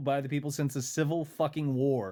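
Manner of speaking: ordinary talk, nothing marked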